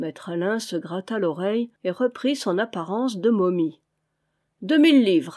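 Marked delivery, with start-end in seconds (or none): 4.6-5.4 loud, cried-out exclamation. Vaunois raises his offer to Maître Alain, exclaiming. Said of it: "s'écria Vaunois".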